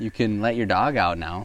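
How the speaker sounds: usual speaking voice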